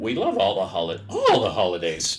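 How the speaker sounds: voice cracking. The speaker talks about loving the holiday season, voice cracking. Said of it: "My voice just cracked".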